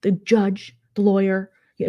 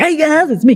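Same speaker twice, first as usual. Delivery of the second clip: very loud, booming, high radio-host voice; 7 semitones higher, 8 dB louder than usual. Describing a modded game character who sounds like Rush Limbaugh, in a Rush Limbaugh-like voice. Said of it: "His voice is just amazing".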